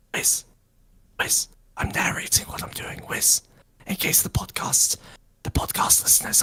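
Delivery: soft, close-in whisper right into an ear. Speaker whispers in a companion's ear, narrating it for podcast listeners: whispering in ear. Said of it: "I'm whispering in your ear".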